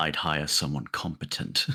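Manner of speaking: low, very slow grumbling mutter under the breath. Speaking in character, answering a thanks with a snide aside: muttering under breath. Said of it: "I'll just mutter under my breath".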